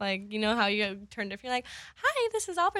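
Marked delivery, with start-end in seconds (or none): 2.0-2.8 very high-pitched put-on phone voice. Recalling how they used to answer the phone, in phone voice. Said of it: "I had like my whole phone voice".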